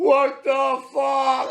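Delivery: put-on very high, shrieking drunken scream. Retelling being drunk on stream on election night: imitating own drunk screaming. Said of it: "I'm screaming".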